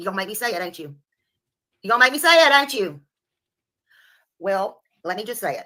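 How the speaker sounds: loud, angry, fed-up, pissed-off outburst. Answering another speaker about a case, pissed off. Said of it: "She's so pissed".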